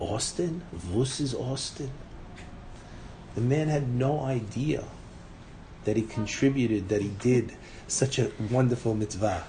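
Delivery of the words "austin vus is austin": put-on slow, deliberate, drawn-out Moroccan accent. Retelling how the rabbi used to finish the story, in a Moroccan accent. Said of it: "the rabbi in his Moroccan accent used to finish and say".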